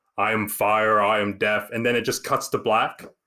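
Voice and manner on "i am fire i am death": slow, cool, drawn-out dragon voice. Retelling a movie scene where the dragon Smaug attacks: Smaug's cool voice. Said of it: "he has a real cool voice".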